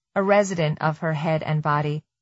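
usual speaking voice

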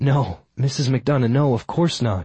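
plain

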